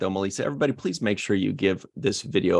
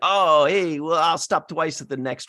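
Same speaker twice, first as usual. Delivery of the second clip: put-on stoned voice, higher pitched; 8 semitones higher, 4 dB louder than usual. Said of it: "Cheech was like".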